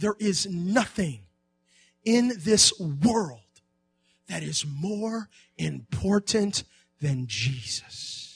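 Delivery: slow, deliberate, unhurried, every word weighed. Repeating a point slowly so listeners hear it: slow and deliberate. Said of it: "I'm going to say it slowly again".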